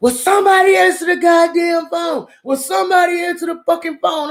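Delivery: very shrill, very high, furious yelling outburst. Acting out how he went off while the speaker was in the bathroom: imitating him yelling. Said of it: "he started going the fuck off".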